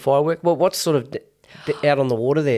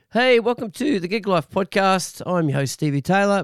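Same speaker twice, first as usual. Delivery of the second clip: voice starting to give out, slightly high; 6 semitones higher than usual. A podcast host opens the show with a voice starting to go. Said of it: "Please excuse my voice. It's starting to go".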